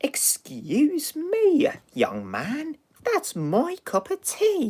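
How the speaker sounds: put-on very high, slow, swooping elderly lady voice. Retelling a story, doing the old lady's reply to DJ: old lady voice. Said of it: "the old lady's like".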